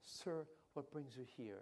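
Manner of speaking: soft, warm, gentle, kind, unintrusive tone. Retelling how he asked a gentleman at the break, in a soft, warm voice. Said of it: "Very soft voice, not intrusive, a kind, warm voice".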